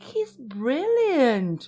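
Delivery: emphatic, high exclaimed outcry. Grandpa Joe answers Grandma Josephine about Willy Wonka, crying out. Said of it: "cried Grandpa Joe".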